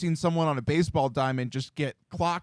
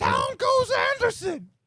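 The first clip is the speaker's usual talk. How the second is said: awful-sounding voice, very high, pitch swinging wildly. Imitating a call after a fight on the field: worst Hammy impression. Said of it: "That was the worst Hammy impression of all time".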